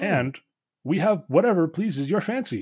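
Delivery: automaton voice. Voicing a many-armed automaton bartender welcoming a guest: Warforged bartender voice. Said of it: "a many-armed automaton, this Warforged bartender".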